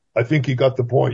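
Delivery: mock-calm delivery. Recounting a movie scene after a spear-gun shot, quoting the hero's very calm line. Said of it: "Sean Connery says very calmly".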